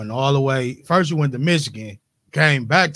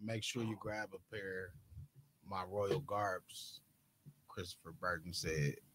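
bored, disinterested, very slow read-through; 6 semitones lower, 22 dB quieter than usual. Speaker reading a quoted line aloud, uninterested reading. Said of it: "like you read it like you wasn't interested".

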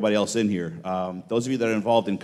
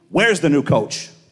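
clumsy, imperfect put-on Bronx accent, raised; 5 semitones higher, 5 dB louder than usual. Retelling a man calling out in the cafeteria, attempting a Bronx accent. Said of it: "I can't do the Bronx accent".

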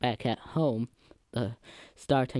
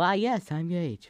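storybook reading-aloud voice, a touch higher; 6 semitones higher than usual. Reading the dialogue aloud, the speaker answers as Gage in a Gage voice. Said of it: "put on my best reading voice to try and imitate Gage".

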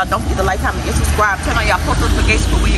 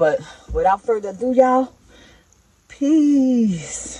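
worn-out, breathless, tired voice with drawn-out words; 3 dB quieter than usual. A video maker signs off to viewers, tired, out of breath. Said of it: "I'm tired, like I'm out of breath".

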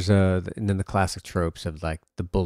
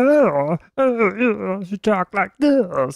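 put-on cartoon cat voice, higher and louder; 5 dB louder than usual. Recalling a favourite character from the cartoons: Attila the cat voice. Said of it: "the voice of the Attila the cat".

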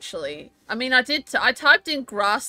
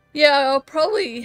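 loud, words stretched while yawning; 4 semitones higher, 5 dB louder than usual. Commenting while playing a monster-catching game, yawning while talking. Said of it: "sorry, I'm yawning and I can't control it".

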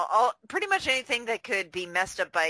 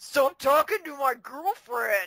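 put-on high-pitched, mopey teenager voice; 7 semitones higher, 3 dB louder than usual. Adding another line from the demon in a mopey teenager voice. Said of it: "he sounds like a mopey teenager".

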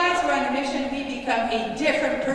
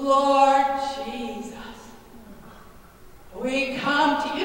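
slow, unhurried, measured, deliberate voice. Speaker acts out their mom starting a prayer, imitating mom's slow praying. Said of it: "my mom talks slow".

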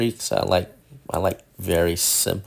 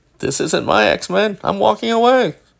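put-on old man voice, higher and louder; 14 semitones higher, 8 dB louder than usual. Replaying own earlier words as a joke: old man voice. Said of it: "I really did sound like an old man there".

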